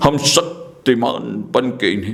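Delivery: very low, deep, drawn-out, slow epic patriarch voice. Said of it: "ये भीष्म पितामह की आवाज है".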